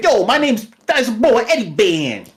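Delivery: put-on Brooklyn accent. Describing how a character in a show talks, in a stereotypical Brooklyn accent. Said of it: "Or not Italian or Brooklyn".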